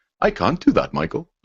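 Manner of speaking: very posh robotic voice. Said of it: "Had the very posh".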